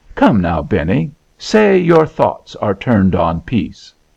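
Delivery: plain reading voice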